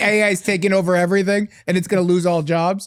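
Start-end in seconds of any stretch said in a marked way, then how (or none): none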